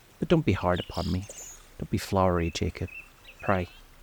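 ordinary delivery

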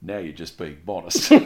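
mock bone-dry deadpan, very low and quiet. Discussing an episode, quoting a comeback to another character, imitating Blake's deadpan. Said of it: "he just deadpan just says".

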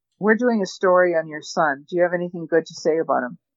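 normal talking voice

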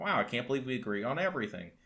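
ordinary talk

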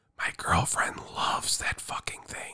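very quiet, breathy, barely voiced whisper. Ranking holiday things so the girlfriend won't overhear: whispering. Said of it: "I'm whispering so she doesn't hear".

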